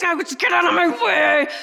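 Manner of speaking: furious, enraged screaming. Retelling being stuck in traffic for an hour: imitating someone screaming. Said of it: "screaming like this".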